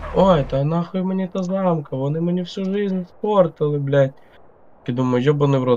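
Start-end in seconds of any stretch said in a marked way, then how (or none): 0.1-4.1 high, drawn-out mock crying, sobbing and tearful. Retelling how a man began crying over a criminal case, imitating someone crying. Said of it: "Він почав плакати".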